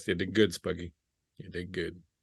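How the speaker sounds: muttered under breath. Taking a last look at the burning warehouse as the group leaves, muttered under breath. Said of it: "I'll say just under my breath".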